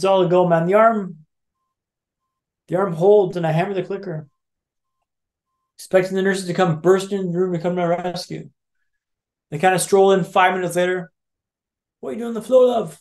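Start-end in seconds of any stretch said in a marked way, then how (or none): 12.0-13.0 fast, very poor, put-on British accent. Retelling what a nurse asked after strolling into the room, in a very poor British accent. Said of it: "my attempt at a very poor British accent".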